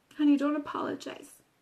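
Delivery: ordinary delivery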